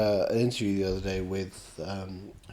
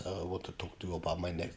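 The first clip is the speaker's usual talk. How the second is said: bad put-on Mexican director voice, quieter; 3 semitones lower, 12 dB quieter than usual. Retelling what the director said on set: bad Guillermo del Toro impression. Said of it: "I'm not very good at the impression".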